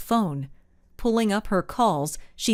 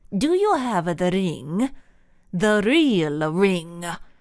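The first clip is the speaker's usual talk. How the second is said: hissed, venomous, poison in every word. Narrator reads a man's question during the cab escape; venomous hiss. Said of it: "he hissed, his voice full of venom".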